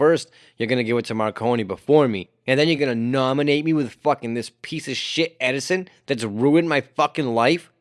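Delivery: ordinary talk, nothing marked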